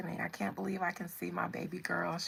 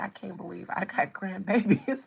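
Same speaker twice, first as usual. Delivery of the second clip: put-on, very loud chuckling, laughing through words; 9 dB louder than usual. Relaying a grandmother's words about her grandbabies: imitating someone chuckling. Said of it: "just chuckled and was like".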